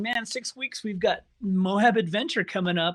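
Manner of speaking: plain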